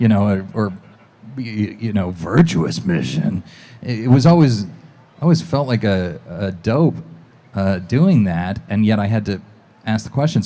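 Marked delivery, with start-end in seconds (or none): 2.1-3.4 rising, questioning intonation on the last word. Showing how Snake asks questions: Snake voice asking a question. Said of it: "all he ever does is ask questions".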